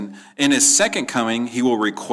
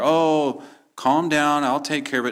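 mock soothing voice, higher; 4 semitones higher than usual. Mocking a wrong view of the Son calming the Father: mock soothing voice. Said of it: "as if the Son is mollifying the Father".

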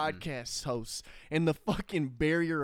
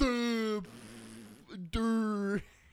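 put-on dim-witted voice, higher; 7 semitones higher than usual. Mocking the podcast's listeners with an impression: mock dim-witted listener voice. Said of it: "here's my impression of them".

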